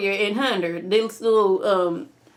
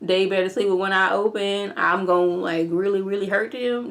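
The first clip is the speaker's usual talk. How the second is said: ordinary talk, nothing marked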